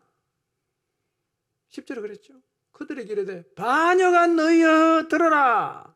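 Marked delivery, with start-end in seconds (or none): 3.5-5.8 furious, loud, slow, high-pitched outburst. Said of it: "감정이 폭발해버렸어요".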